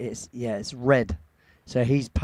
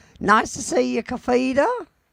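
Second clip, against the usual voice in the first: loud, very high-pitched put-on character voice; 12 semitones higher, 5 dB louder than usual. Greeting another speaker, kafida, on a stream: put-on high-pitched voice. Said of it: "I don't know how you get your voice that high".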